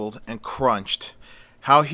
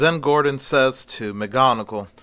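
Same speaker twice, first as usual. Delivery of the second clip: plain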